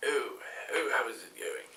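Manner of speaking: put-on soft, snooty, old-timey British gentleman accent. Describing a disguised character with a moustache, uppity old british man accent. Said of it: "like an uppity British accent, like old, old timey old man".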